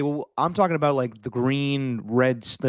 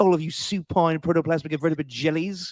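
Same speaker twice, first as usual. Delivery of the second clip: put-on lofty, fancy-sounding, pompous British accent; 4 semitones higher than usual. Repeating a man's insult to people who don't want to hear him out, in a pompous British accent. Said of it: "He's got such a pompous British accent".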